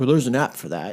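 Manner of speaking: dry, sarcastic, joking tone. Retelling a sarcastic reply to a neighbor's haunting worry: imitating own sarcastic remark. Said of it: "I sarcastically".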